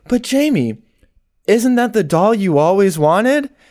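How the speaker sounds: mock overly friendly, kindly, friendliest possible tone. Retelling a movie scene, imitating a very friendly tone. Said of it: "in the most friendly way possible".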